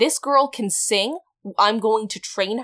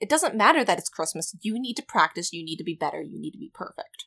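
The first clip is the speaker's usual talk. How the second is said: imitated strict scolding, quieter; 3 semitones lower, 6 dB quieter than usual. Retelling Aunt Marie telling Eden to practice: imitating a strict aunt. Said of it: "Aunt Marie's very strict".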